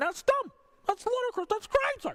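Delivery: put-on radio-host DJ voice, pitched very high. Ranting about a twenty-dollar wage, imitating Doctor Ken. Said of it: "Is that a good impression".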